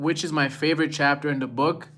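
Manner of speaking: ordinary talk, nothing marked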